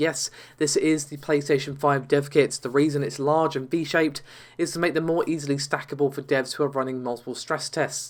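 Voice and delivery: ordinary talk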